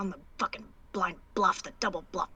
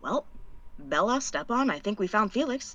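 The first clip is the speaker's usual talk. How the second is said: hushed, muttered under the breath; 4 dB quieter than usual. In a role-played scene, Cass speaks to Bella and Stepan under her breath. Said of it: "under her breath".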